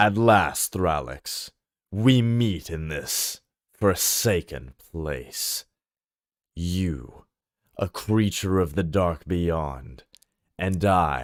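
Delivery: measured, deep, controlled, haughty, arrogant voice. Retaking the scene, addressing thralix: deep, controlled, arrogant voice. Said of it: "very in deep voice, controlled, with an air of arrogance".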